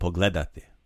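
pogledati with stress on second syllable gle. Drilling the word pogledati with a learner: stress on gle in pogledati. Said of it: "Let's go with the accent the second syllable again".

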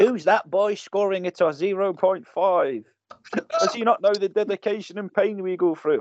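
mocking, high-pitched tone. Imitating ballerinas commenting on his low score, in a mocking commenter voice. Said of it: "is that your comments voice?".

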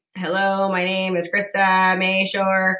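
exaggeratedly slow speech. Speaker shows how teleprompter speed seven feels to her, exaggeratedly slow speech. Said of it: "if I speak at 7, I feel like I'm".

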